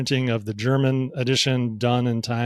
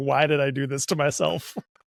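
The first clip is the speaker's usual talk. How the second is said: exasperated talk mixed with laughter. Retelling talking to oneself this morning, head in hands: imitating own laughing self-talk. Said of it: "my head in my hands, laughing, saying".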